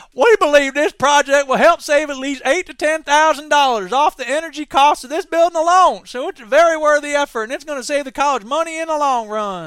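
very loud, high-pitched put-on Kentucky accent. Reading out a college communications director's quote in the news, in a put-on Kentucky accent. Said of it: "then I have to do a Kentucky accent".

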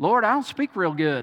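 put-on Texas accent. Picturing Moses speaking to the Lord, in a Texas accent. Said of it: "in my Texas accent".

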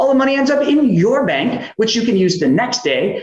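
rising excited voice.

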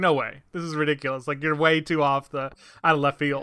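ordinary delivery

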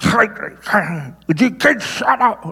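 play-acted, very slow, high, talking around thumb in teeth. Retelling how a father scolded the kids when mad: imitating father biting his thumb. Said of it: "Like that".

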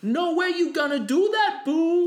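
very high, exaggerated fake Spanish accent.

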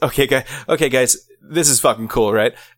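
clumsy, socially awkward, stilted delivery. Retelling a line from a show scene, imitating an awkward delivery. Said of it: "such an awkward fucking way".

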